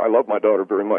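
ordinary delivery

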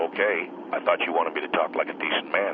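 ordinary delivery

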